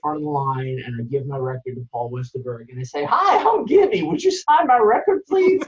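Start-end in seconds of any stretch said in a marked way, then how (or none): 3.1-5.6 high, loud, hollering Texas drawl. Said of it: "[name] would just say".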